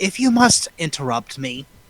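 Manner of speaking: condescending, haughty tone. Voicing a character answering an interruption: condescending. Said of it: "she is going to be condescending as possible".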